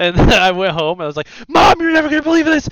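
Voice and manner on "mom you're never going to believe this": very high-pitched, frantic, excited freak-out. Retelling asking mom for money after a find: retelling own past freak-out. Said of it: "I started freaking out".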